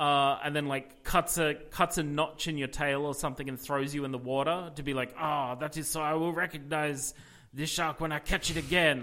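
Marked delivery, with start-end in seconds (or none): 5.2-9.0 put-on very heavy, overdone French accent, laid on thick. Acting out someone who will catch the shark again, in a very french accent. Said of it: "I'm going very French".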